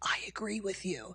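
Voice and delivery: slow, soft, hushed, confiding secretive whisper. Addressing conservatives, the speaker acts out a stranger in a restroom: retold whisper.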